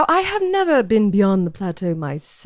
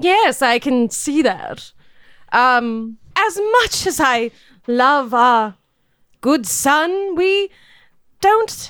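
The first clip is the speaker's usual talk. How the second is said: very slow, sweetly condescending, patronizing rich lady drawl. Playing the lady of the estate in a role-playing game: condescending wealthy lady voice.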